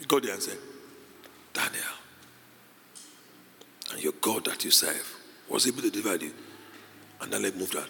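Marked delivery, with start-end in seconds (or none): 1.5-6.3 grieving, mournful, lamenting voice. Retelling a story, voicing the king speaking to daniel: retelling the king lamenting. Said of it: "with a lamenting voice".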